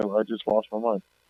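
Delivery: ordinary talk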